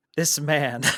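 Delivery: put-on amused, angry tone. Retelling Bill's reaction while watching the announcement: imitating Bill being happy mad. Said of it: "Bill was mad".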